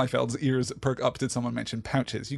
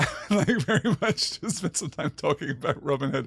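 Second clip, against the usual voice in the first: speech broken up by laughter; 2 semitones higher than usual. Reacting to a joke in the chat while reading, laughing while talking. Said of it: "I'm laughing because".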